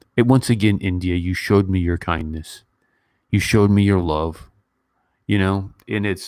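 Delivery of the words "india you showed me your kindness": usual speaking voice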